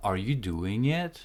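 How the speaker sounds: pitch rising on final word "it". Yes-or-no question example: rising pitch on it. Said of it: "your intonation will go up at the end".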